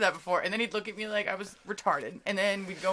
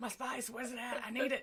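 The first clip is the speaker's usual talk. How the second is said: fake Mexican-accented voice; 3 semitones higher, 10 dB quieter than usual. Joking along about the man who needed his space: imitating a mexican accent. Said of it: "that Mexican accent".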